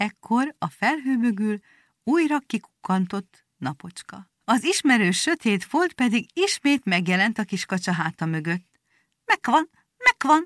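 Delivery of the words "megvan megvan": sudden, pitched-up exclaiming cry. Zseli and Pi call to the duckling as his shadow reappears, crying out. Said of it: "kiáltotta Zseli".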